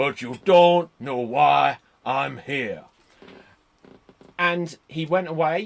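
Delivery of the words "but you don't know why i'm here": loud, slow, deliberate delivery. Retelling a wrestler's ring speech after an interrupted match: Scott Hall impression. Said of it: "I'm really going for this impression here".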